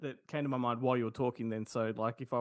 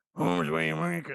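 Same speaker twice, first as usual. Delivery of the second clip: raspy, rough, creaky movie-character voice; 3 semitones higher, 3 dB louder than usual. Recalling a scene from Joe Dirt: imitating a Joe Dirt character. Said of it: "and he's saying, like".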